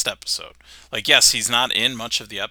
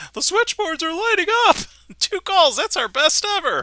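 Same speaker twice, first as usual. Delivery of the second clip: put-on very high-pitched, gawky, pimply teen voice; 4 dB louder than usual. Recalling a public access TV sketch, imitating a pimply teen. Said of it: "the pimply face teen that's working in the".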